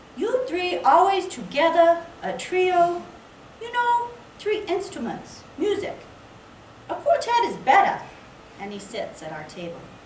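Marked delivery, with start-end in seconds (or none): 0.2-8.0 put-on very high, loud, broken-English foreign accent. Retelling a man who joined their table, in an imitated foreign accent. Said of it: "forgive my attempt to capture the, um, the accent".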